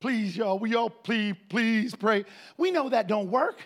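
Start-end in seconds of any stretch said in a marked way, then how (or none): 0.0-2.3 mock pleading and begging, much slower. Recalling how they begged people in church to pray, mock begging and pleading. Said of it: "Begging and pleading".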